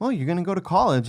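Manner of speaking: bright, high, upbeat, encouraging teacherly voice. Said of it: "this very, very positive demeanor, and I'm talking like a teacher now".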